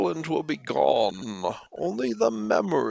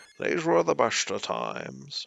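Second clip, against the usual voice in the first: sleepy put-on celebrity voice; 3 semitones lower than usual. Trying out one celebrity voice after another before choosing, Morgan Freeman voice. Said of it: "maybe a Morgan Freeman".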